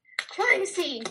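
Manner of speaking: sudden, high-pitched, yelled exclamation. Recounting the moment Sherlock falls and John yells: retelling a yell. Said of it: "and then John yells".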